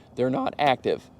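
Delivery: cracking voice. Explaining the child safety lock switch: voice cracking like a teenager. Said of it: "Excuse my sounding like a teenager there".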